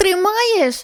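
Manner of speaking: anxious, nervous, high called-out shout. A girl learning to ride her bike calls to the woman behind her: nervous shout. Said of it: "знервовано крикнула вона".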